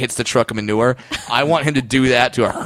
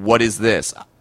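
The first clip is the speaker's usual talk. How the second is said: snooty, condescending, looking-down-on-you tone; 2 semitones lower than usual. Retelling how someone asks about a chocolate: imitating a condescending question. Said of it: "I love the condescending".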